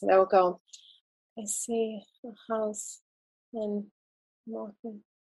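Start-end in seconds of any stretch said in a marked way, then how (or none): 1.4-5.0 barely audible, half-asleep, very quiet, slow drowsy mumble. Speaker shows how people talk during hypnosis; imitating speech under hypnosis. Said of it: "they are talking like this".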